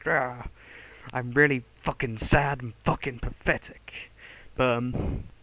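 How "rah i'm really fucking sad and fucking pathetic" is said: really angry, slow, drawn-out tone. Mimicking how people usually say a certain word, mock really angry tone. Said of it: "people usually say it with a really angry tone".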